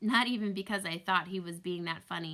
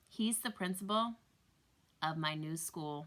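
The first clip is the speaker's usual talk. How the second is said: usual speaking voice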